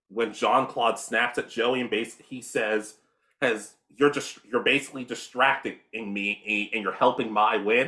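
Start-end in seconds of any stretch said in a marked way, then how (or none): none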